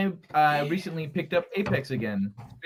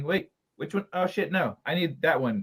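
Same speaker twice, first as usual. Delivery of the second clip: ordinary talk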